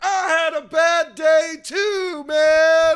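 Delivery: very high, very loud, slow, shrill drawn-out yell. Retelling what a guy at the back of the crowd yelled: imitating a heckler yelling. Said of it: "Some guy in the back yells".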